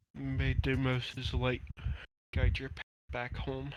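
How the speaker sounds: whispering quietly under his breath. Voicing a character blessing the fallen tiefling: whispering under his breath. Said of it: "Turl just whispers".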